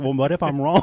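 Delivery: ordinary talk, nothing marked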